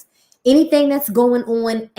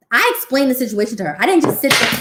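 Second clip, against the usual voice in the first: usual speaking voice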